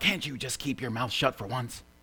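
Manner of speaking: hushed, growling voice. Telling a joke, voice the driver speaking to his wife, retelling a growl. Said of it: "the driver looked over at his wife and growled".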